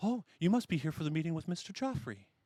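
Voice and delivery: bubbly, cheerful, high, sing-song lady's voice. As the group comes through the door, a narrator voices a lady: bubbly lady voice. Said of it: "this bubbly lady".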